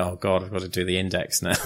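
plain

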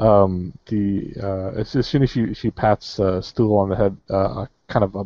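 ordinary delivery, nothing marked

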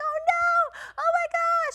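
very high, very slow, shrill, drawn-out panicked scream. Retelling how a lady on the other side started screaming, imitating a woman screaming. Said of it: "this lady starts screaming out of her mind".

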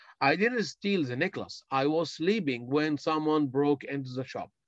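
ordinary delivery

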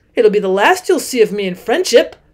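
plain reading voice

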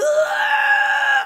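very high, shouted, straining grunt. Doing an impression asked for by another speaker: Ben Foster straining grunt. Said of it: "Can you do an impression?".

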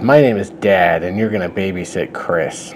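ordinary delivery

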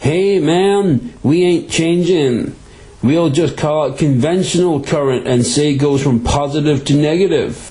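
put-on American accent. Explaining electric current, voicing what America said: put-on American accent. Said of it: "Like my wee American accent".

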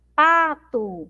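first syllable pá in pato stressed and lengthened. Teaching the strongest syllable in pato: stressed, lengthened 'pa'. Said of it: "eu demoro mais um pouquinho falando a sílaba pá".

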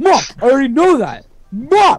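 put-on yell, high and loud.

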